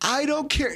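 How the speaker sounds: put-on shrill, very high, drunken screaming. Retelling being thrown out in the night: imitating someone screaming. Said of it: "he's screaming at me".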